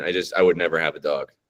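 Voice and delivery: ordinary talk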